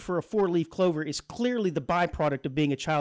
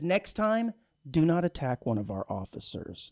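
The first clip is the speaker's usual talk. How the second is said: mock playful, teasing, half-joking scolding tone. Retelling what the woman who wanded him said next; retelling a joking warning. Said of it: "she was saying it somewhat jokingly".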